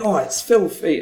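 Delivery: eager, approving enthusiasm. Showing how to treat even a lurid term as good: enthusiastic. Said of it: "You say it with enthusiasm".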